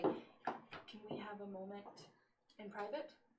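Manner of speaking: quiet, discreet, hushed and slow. Walking up to a man drinking with soldier buddies, speaking quietly to him. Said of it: "and then just kind of quietly".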